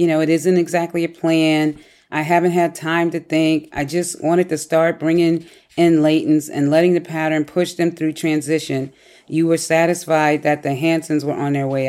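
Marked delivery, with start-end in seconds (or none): none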